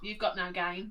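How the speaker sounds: mock bone-dry deadpan, low and flat. Retelling what a kid said to him, imitating a deadpan delivery.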